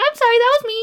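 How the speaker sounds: very high, sheepish, meek, apologetic little squeak. Comparing two car horns, voicing the other person's horn as mock-apologetic. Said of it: "Mine's accusatory and yours is like".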